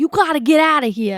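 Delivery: put-on very loud, high-pitched New York cop accent. Speaker mocking a film's cop during an evacuation, New York accent. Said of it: "sounds like they're from New York".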